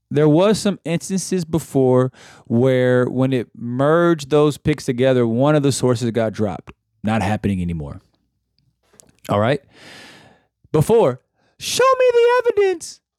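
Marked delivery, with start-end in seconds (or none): 11.6-12.9 very high, put-on, girlish falsetto-style voice. Discussing merged picks and dropped sources, one line in a put-on girly voice. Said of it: "I don't like that voice".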